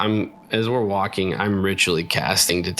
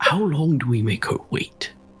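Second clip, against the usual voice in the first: dropping into a stage whisper, slightly higher pitch; 7 semitones higher than usual. A character looks at a companion and asks: very hushed voice. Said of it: "in a very hushed voice".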